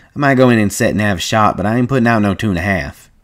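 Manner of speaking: ordinary delivery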